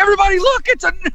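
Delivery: high-pitched ranting shout.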